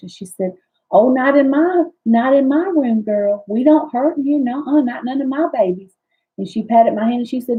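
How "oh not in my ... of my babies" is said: put-on woman's voice, higher and slower. Recalling a woman who took your hand while you were in pain, imitating how she talked. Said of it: "I'm just gonna talk like she talked".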